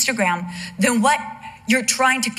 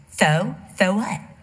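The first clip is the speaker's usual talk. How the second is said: put-on lisp, pitched lower; 3 semitones lower than usual. Retelling his reply after being told he had just killed Robbie Robot, in Char's lisp. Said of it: "because he used to lisp".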